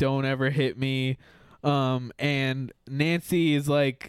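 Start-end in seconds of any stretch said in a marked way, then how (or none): none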